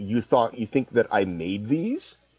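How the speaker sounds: scoffing, derisive, mocking tone. Retelling an NPC's reply when accused of making the butt crack: imitating a mocking retort.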